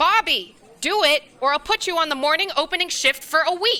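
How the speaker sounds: stern angry mom voice. Ordering bobby to carry the food shipment: angry mom tone. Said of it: "you sound like an angry mom".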